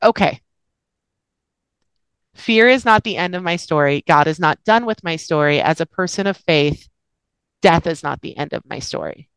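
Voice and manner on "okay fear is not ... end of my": plain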